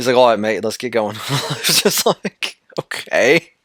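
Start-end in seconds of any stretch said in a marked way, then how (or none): 0.2-1.2 quick put-on Australian accent, rattled off. Quoting another man's words in a story, in a put-on australian accent. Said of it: "was Australian".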